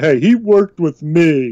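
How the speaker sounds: put-on, teary-eyed voice. Imagining a coach being teased about Peyton Manning, answering mock teary-eyed. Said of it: "getting all, like, teary-eyed and saying".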